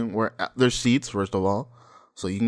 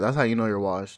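ordinary delivery

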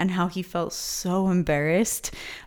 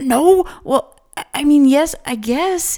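very loud, slow, halting stammer, pitched up; 9 semitones higher, 8 dB louder than usual. Narrating a character answering his grinning brother's question, stammering. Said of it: "he stammered".

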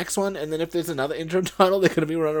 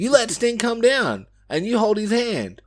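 scolding, pitched-up yell; 5 semitones higher, 3 dB louder than usual. Retelling watching a match, imitating screaming at the TV. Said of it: "screaming at my T V".

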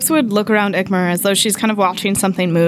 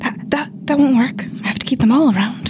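quiet mumbling under breath, higher; 5 semitones higher than usual. Voicing Eclipse looking at the ground, talking to Ick: muttering under her breath. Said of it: "she kinda says under her breath".

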